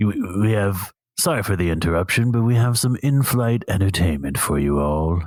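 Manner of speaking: gruff, gravelly put-on British accent. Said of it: "We need to hear the gruff".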